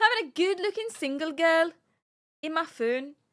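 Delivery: put-on poor northern English accent. Reading a breakup message aloud in an attempted Liverpool or Newcastle accent. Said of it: "Liverpool and Newcastle are the same to me".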